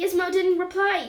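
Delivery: ordinary delivery, nothing marked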